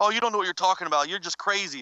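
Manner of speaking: ordinary talk, nothing marked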